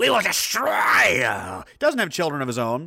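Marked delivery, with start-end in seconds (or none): 0.0-1.6 swooping, animated cartoon villain voice. Retelling a politician's words as a G.I. Joe Cobra villain voice. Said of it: "some kind of Cobra, uh, villain from G-".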